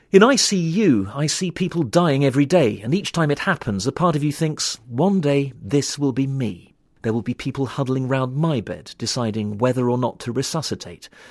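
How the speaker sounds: normal talking voice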